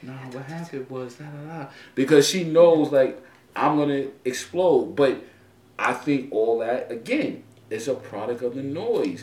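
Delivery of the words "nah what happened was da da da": very soft, quiet, secretive half-whisper. Retelling how a daughter half-whispered the story to the speaker's wife: imitating someone half-whispering. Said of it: "she whispers to my, my wife".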